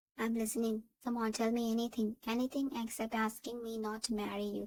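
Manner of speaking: plain reading voice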